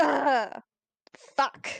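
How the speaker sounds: pained, grunted sound of someone hurting. Player voicing their hurt character before asking the group for help, grunting in pain. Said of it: "I'm just gonna like grunt in pain".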